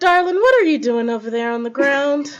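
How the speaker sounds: acting in a put-on Southern accent. Acting a scene, calling to someone down on the ground, in a southern accent. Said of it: "adjusting my brain for Southern accent".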